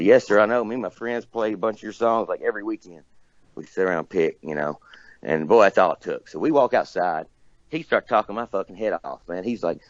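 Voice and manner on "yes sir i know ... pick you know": usual speaking voice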